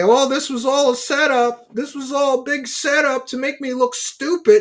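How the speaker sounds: mock, very high, tearful, whiny crying. Mocking a debater after a debate: imitating Billy Carson whining. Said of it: "for Billy Carson to cry and say".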